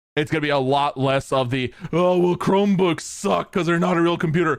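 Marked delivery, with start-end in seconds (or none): 2.0-4.6 mocking, dopey, dumb-sounding voice. Mocking people who dismiss Chromebooks, dumb-sounding voice. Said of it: "dumb sounding voice".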